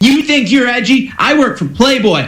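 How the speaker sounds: high-pitched, play-acted, worked-up outburst. Retelling what a man screamed in his face: imitating someone screaming. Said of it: "he just screamed and was triggered".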